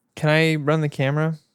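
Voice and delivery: sad, sorrowful tone. Asking the director to run the camera, sounding sad. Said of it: "Why did you sound so sad?".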